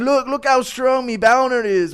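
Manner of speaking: very high-pitched put-on voice. Guessing what a fighter means by a strength stunt: Conor McGregor impression. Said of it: "like him saying".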